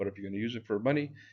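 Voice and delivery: fast, rushed talk. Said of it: "I'm talking fast, I know".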